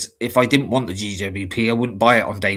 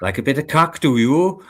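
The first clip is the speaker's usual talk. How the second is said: put-on Welsh accent; 4 semitones higher than usual. Showing a saying used to get into the accent: welsh accent. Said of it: "sometimes it's quite hard to just go into the accent".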